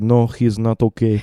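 put-on English with a Russian accent. Retelling a conversation about an accident, quoting their dad: dad's russian accent. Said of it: "in his Russian accent".

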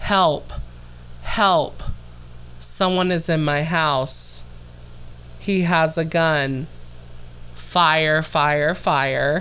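level, unafraid, dead flat monotone, no urgency. Reenacting a caller's 911 call for the host: imitating a monotone 911 call. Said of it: "It is so monotone".

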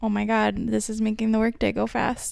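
ordinary talk, nothing marked

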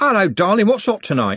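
bright, cheerful, very high voice. A man comes up the steps and greets a woman, cheerful. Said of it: "said cheerfully".

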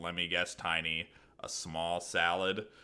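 soft, sarcastic tone. Retelling a cartoon scene as a customer walks to the register, mock-sarcastic Squidward voice. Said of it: "being sarcastic this whole time".

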